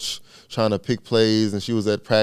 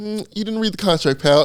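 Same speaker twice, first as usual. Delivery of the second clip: mock patronizing, condescending tone, pitched up; 10 semitones higher than usual. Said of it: "and he goes".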